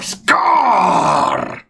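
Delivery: pumped-up announcing with oomph. Showing how to announce a player's name: announcing with oomph. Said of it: "put some fucking oomph into that".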